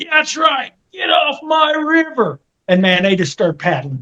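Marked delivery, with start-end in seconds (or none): 0.0-2.4 mock shrill, high, stretched-out drawn-out holler. Retelling what Bob yelled at passing canoes: imitating Bob yelling. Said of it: "Bob just yelled at him".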